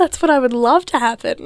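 sarcastic delivery. Answering a teasing remark about a recorder performance: sarcastic tone. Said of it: "Your sarcasm is really great today".

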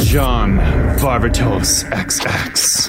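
low, slow cologne-ad announcer voice.

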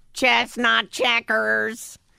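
slow, high, stretched-out robot voice.

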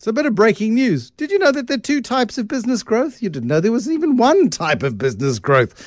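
facetious, tongue-in-cheek teasing, very high and swooping. Introducing a guest's topic on business growth: facetious tone. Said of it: "I'm being facetious".

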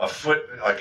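plain

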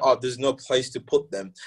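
ordinary talk, nothing marked

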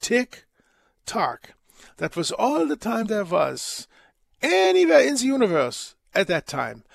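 put-on German accent in an older, scholarly-sounding voice. Retelling a Second City routine's old professor lecturing on time, German accent. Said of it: "with a German accent".

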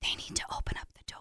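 mock whispering. Retelling talking to a dog behind a door: retelling a whisper. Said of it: "whispering so they can't hear me through the door".

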